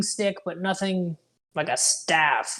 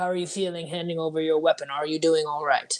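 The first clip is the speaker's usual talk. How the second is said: theatrical stage whisper. A player, in character, stands next to Idala and asks her; stage whisper. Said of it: "stage whisper".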